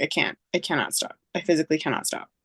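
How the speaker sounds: plain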